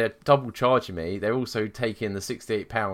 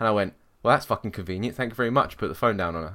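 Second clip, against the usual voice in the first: ordinary talk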